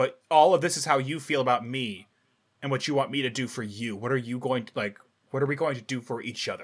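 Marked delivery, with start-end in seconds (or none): none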